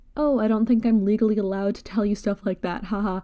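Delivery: put-on playful, teasing, light, joking delivery with a laugh. Retelling own reply to a doctor asking about father: retelling a joking reply.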